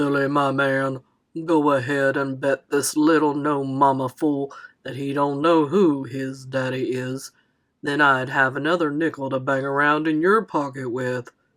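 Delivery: very deep, low talking buffalo voice. Reading a story where a boy pretends a nickel's buffalo talks: deep buffalo voice. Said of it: "It had a deep voice, like you'd figure a buffalo would".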